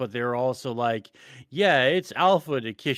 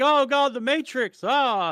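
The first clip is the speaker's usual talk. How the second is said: very high, performative, fake dramatic panic; 12 semitones higher than usual. Retelling someone flipping his desk in staged shock: imitating fake dramatic panic. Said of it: "it's such performative, fake bullshit".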